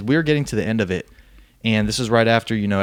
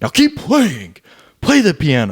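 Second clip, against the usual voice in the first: put-on weird older man's yelling voice, swooping pitch; 5 semitones higher, 5 dB louder than usual. Describing a film character who starts yelling at his kids: imitating a weird older yelling voice. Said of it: "he has that weird voice when he's older, and he starts yelling".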